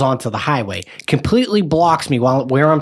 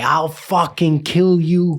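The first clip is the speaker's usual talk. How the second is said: mock-screaming, re-enacted; 3 semitones higher than usual. A driver retelling yelling at another driver in traffic, retelling a scream. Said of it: "I'm screaming at this guy".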